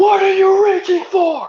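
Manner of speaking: very high bellow from the lungs. Recounting reaching for a license, the speaker imitates a guy yelling at the top of his lungs. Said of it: "at the top of his lungs".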